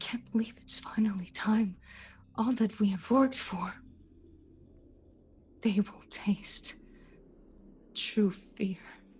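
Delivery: secretive, scheming, conspiratorial stage whisper. A game master voicing enemies talking near a hidden player, in hushed voices. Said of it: "They're speaking in kind of hushed voices".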